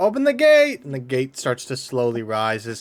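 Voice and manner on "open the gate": loud shouting, very high pitched. Narrating the scene, the storyteller voices the guards calling out: guard shouting. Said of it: "they shout out".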